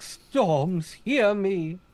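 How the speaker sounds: high, cried-out voice. Imitating the character crying out to the wind: Storm impression. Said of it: "That's a pretty good Storm impression".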